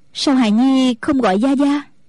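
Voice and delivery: plain reading voice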